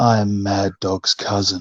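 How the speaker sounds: put-on seductive woman's voice. Retelling a woman approaching after a match: imitating a seductive woman. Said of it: "And she's so seductive".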